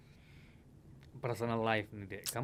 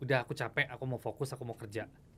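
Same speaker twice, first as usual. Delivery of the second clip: ordinary delivery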